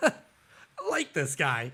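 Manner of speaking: put-on voice, speaking while laughing. Retelling a movie scene where Christopher Walken starts laughing: imitating Christopher Walken laughing. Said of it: "he starts laughing. He's like".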